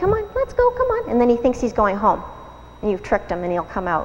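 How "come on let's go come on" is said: bright, friendly, very high, cheerful coaxing voice. Coaxing a dog out of its cage, in a nice cheerful voice. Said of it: "use a nice cheerful voice".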